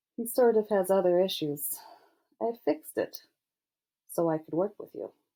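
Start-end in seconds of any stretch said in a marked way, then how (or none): none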